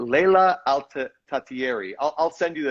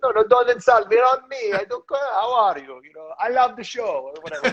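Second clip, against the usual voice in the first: put-on Italian accent, very high; 9 semitones higher than usual. Acting out someone insisting it's on them, imitated italian accent. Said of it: "I shouldn't be doing that Italian accent".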